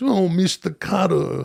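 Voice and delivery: rough, creaky, raspy put-on celebrity voice. Imitating a comedian's sketch impression for the co-host: Dana Carvey's John Travolta voice. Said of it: "where he's always talking like this".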